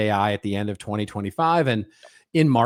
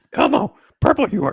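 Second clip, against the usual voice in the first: very high, loud, odd put-on voice; 6 dB louder than usual. Two speakers joke about doing a whole show as Yoda and Elmo; Yoda voice. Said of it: "I'll do Yoda".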